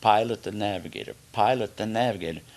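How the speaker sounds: ordinary talk, nothing marked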